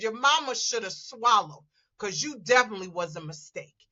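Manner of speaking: plain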